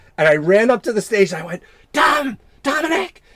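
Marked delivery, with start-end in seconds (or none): 1.9-3.1 put-on whisper-yell, much higher pitch. Retelling calling out to someone onstage from the side of the stage, imitating a whisper-yell. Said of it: "like whisper yell".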